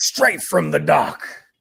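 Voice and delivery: salty, gruff sea-dog pirate voice. Describing someone's fresh seafood, saying it like a pirate would. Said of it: "why I said it like a pirate would".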